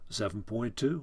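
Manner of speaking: plain reading voice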